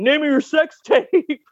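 high, acted-out barking yell. Retelling what was barked at the TV: retelling yelling at the TV. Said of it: "I'm yelling".

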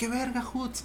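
mock sudden, blurted shouted exclamation. Speaker retells what a university acquaintance always shouted, retelling a shout. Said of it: "¿sabes qué gritaba".

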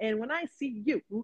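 put-on stern grandmother voice. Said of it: "this is what she said".

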